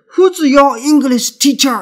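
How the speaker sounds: stiff wrong reading of who's.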